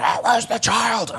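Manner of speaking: bad, overacted, drawn-out hammy yell. Retelling a bad audition heard through the wall: imitating someone yelling. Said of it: "he's yelling".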